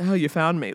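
mimicked cool, calm voice. Retelling a detective's reply when caught searching a shed: imitating a cool, calm reply. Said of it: "so cool, so calm".

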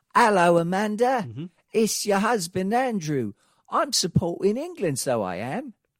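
slow, high-pitched put-on London Cockney accent. Describing what the other speaker could say wearing an England jersey, put-on Cockney accent. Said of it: "when I put on an English accent, that's my Cockney accent".

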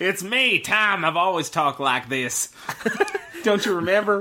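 put-on sudden Southern-accented voice. Answering a companion who asks about the sudden change, in a put-on southern accent. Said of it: "southern accent all of a sudden?".

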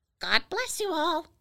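loud, high, squawking parrot voice. Narrating, a parrot on a clothesline calls out to fruit pickers, loud parrot squawk. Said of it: "in a loud voice squawked".

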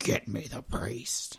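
put-on very low, deep, whispered possessed-boy demonic voice. Retelling the boy in the Pope's exorcism trailer; very low possessed-boy voice. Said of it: "That was really low. I'm sorry if I scared anybody".

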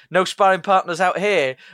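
ordinary talk, nothing marked

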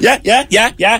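very high mock chorus of yeahs. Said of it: "and you go".

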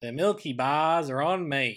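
put-on broadest Australian accent, loud, slow, dragged out. Retelling the closing line of an old TV ad: imitating broadest Australian accent, drawn out. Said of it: "He's got the broadest Australian accent".

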